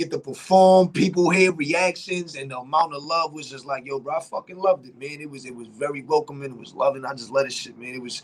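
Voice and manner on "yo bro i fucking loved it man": ordinary talk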